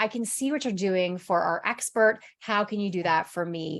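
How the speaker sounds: ordinary talk, nothing marked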